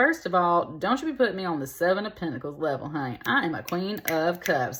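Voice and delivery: ordinary delivery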